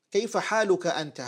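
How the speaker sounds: normal talking voice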